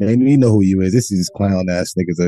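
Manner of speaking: usual speaking voice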